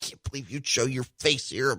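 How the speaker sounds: seething, hushed, resentful grumbling mutter. Retelling what the sponsor said at a committee debate: imitating someone muttering. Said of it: "she's over there just muttering".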